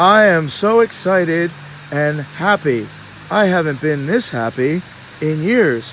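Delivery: solemn, unexcited, flat and dull voice. Voicing Abe, who claims to be happy: solemn, unexcited voice. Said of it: "don't show your happiness too much".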